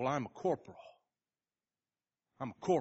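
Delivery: put-on smug voice. Telling a story, quoting a man's answer when asked why he isn't helping, retelling a smug reply. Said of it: "And the man just very smugly said".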